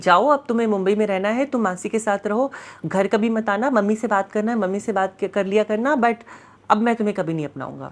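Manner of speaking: ordinary talk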